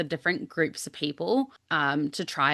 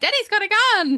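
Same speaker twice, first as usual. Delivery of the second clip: put-on very loud, very high, shrill, drawn-out kid yell; 8 dB louder than usual. Retelling how a four-year-old opened the door and yelled: imitating Ezra yelling. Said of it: "opened the door and yelled out".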